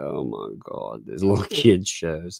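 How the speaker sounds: play-acted, utterly bored tone. Imitating the oldest complaining about kid shows, imitating someone bored. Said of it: "she is so freaking bored".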